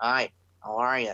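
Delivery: slow, dull, boring delivery. Comparing a changed wrestler to a cartoon figure: boring Squidward voice. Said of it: "he's friggin' changed and he's all boring".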